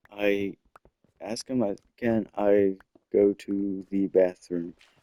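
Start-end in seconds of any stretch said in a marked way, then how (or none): 2.0-4.8 very slow, halting, broken by silent gaps. Retelling asking a teacher to go to the bathroom: imitating own past speech with silent pauses. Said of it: "little intervals in between where I'm just silent".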